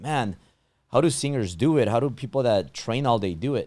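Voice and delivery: ordinary delivery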